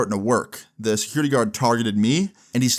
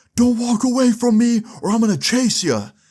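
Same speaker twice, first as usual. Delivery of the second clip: mock, very high-pitched, angry screamed delivery; 11 semitones higher, 4 dB louder than usual. Quoting a security guard as the speaker's friends walk away, retelling a scream. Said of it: "the security guard screams again".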